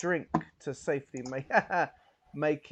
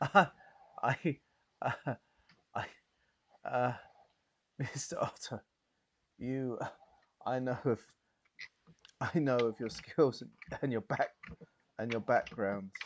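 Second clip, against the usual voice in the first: hushed, quiet, halting confiding voice; 3 semitones lower than usual. Narrator voices a woman leaning in close to the listener, quiet and hushed. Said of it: "she sort of quietens down and she sort of sort of leans in close".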